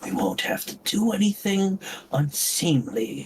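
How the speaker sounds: very low, hushed whisper. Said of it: "in a, a very low whisper says".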